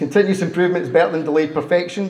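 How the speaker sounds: ordinary delivery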